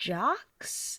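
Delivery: hushed whisper under the breath. Naming a group after trailing off mid-sentence: whispering. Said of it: "Why'd you have to whisper that?".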